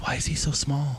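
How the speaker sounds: high, hushed, sideways little half-whisper. Narrator voicing a character who half-whispers a question to the player, half-whispering. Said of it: "she like whispers to you".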